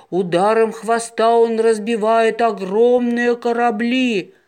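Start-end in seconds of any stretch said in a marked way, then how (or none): none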